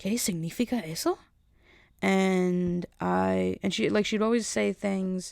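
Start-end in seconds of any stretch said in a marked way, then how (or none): 0.0-1.2 Spanish, questioning rise at the end on eso. Retelling how a coworker asked something: imitating coworker's questioning rise. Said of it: "with a question mark at the end".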